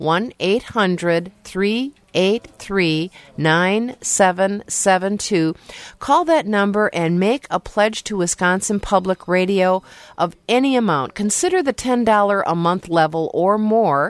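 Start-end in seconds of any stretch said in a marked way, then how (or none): 0.0-5.6 said slower, slowed-down pace. Repeating a pledge phone number on public radio, saying it slower. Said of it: "Let me say that a little bit slower".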